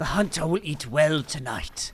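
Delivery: put-on nature documentary narrator voice. Narrating a gecko hunt in a game: David Attenborough impression. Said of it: "my David Attenborough impression".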